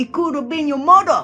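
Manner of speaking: imitated, put-on Indian accent. Retelling the funniest thing someone said to them: put-on indian accent. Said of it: "I'll try to do it in my best Indian accent".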